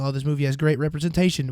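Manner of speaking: plain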